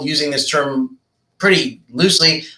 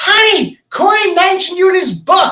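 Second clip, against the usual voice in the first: play-acted, very high, far-carrying shout. Retelling what his wife called across the pool: imitating his wife yelling. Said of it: "My wife screams across the pool".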